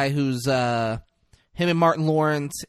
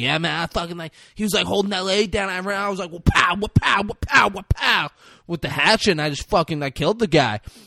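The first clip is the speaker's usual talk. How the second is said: put-on high, rambling burnout kid voice; 5 semitones higher than usual. Act out a man giving an interview after a hatchet killing, imitating a burnout kid. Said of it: "he sounds like a fucking burnout kid".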